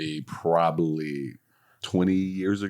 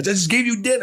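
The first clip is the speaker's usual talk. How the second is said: put-on shouting, higher and louder; 5 dB louder than usual. Retelling yelling at a man who is walking away: retelling own yell. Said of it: "I'm yelling at him as he's walking out".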